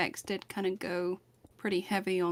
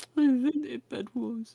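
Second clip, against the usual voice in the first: pitiful put-on British accent, mopey, pitched up; 6 semitones higher, 5 dB louder than usual. Claiming to have invented Bed Wars in a put-on sad, pitiful British voice. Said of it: "Sad, pitiful Brit voice".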